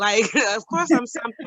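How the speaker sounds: ordinary delivery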